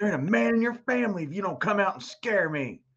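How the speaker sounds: high-pitched yelling. Imitating a ghost show's host yelling at the ghost: imitating Zach yelling at a ghost. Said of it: "yells at the ghost".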